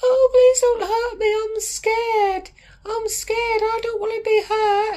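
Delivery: put-on shrill, very high, frightened, scared pleading. Mocking the people the speaker says will run for the hills, mock-scared pleading. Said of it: "They'll all start running for the fucking hills".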